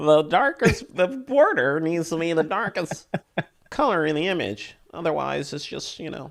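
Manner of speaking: high, nasal, picky-sounding mocking voice. Quoting people who picked on an image's border, in a nasally voice. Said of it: "You got to say that with a nasally voice".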